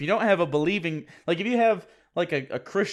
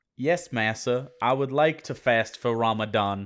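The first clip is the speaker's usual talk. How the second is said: low, put-on Southern accent; 6 semitones lower than usual. After apologizing, the speaker shows the voice he almost used: offensive mock slave voice. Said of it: "a very offensive slave voice".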